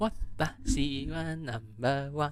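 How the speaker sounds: put-on Hebrew-accented voice. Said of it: "Should I say in a Hebrew voice?".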